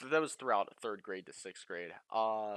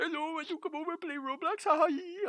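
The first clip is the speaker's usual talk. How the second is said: deliberately stupid, goofy put-on voice, very high; 6 dB louder than usual. Retelling a time he talked to people in a funny stupid voice.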